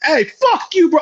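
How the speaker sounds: pretend yelling. Acting out a reaction to a fighter before recognizing him: pretend yelling. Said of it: "I'd hella yell at first".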